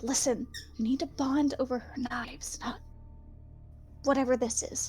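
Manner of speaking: whispered line in character voice. Playing a character who whispers advice to another character: whispering in character. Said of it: "I'm just gonna whisper to Azrael".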